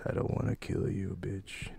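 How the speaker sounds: breathy, whispered, menacing tough-guy cowboy voice. Joking about a line from a movie: Clint Eastwood voice. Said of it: "In my Clint Eastwood voice".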